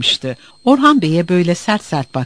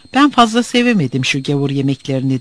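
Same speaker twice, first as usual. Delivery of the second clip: ordinary delivery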